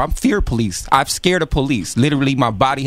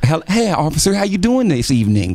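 put-on, mock-proper, square, stiff uptight voice; 4 semitones higher than usual.

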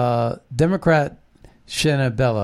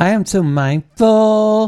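put-on pitched-up, loud valley girl voice; 8 semitones higher, 6 dB louder than usual. Quoting a Secretary of State's words about ballot access in a valley girl voice. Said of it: "sounding like a valley girl".

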